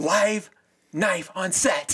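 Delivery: loud, high, drawn-out, showoff scream. Telling how a guy on set showed off: retelling a scream. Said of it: "He screams at the top of his voice".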